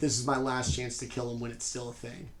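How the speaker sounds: ordinary talk, nothing marked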